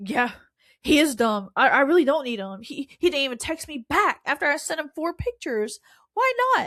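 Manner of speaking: play-acted, riled-up, worked-up venting rant. Retelling how she talked herself into it, imitating someone getting riled up. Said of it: "getting herself riled up".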